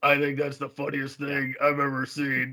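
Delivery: play-acted, dry, flat deadpan, never cracking up. Describing someone's funny moment, imitating a deadpan delivery. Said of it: "it's all deadpan".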